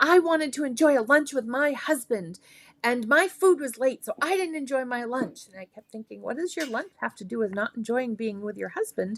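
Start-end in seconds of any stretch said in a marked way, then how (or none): 0.0-5.5 put-on angry yelling. Telling about a restaurant customer complaining to a waiter, imitating someone yelling. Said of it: "She kept yelling at the the um um waiter".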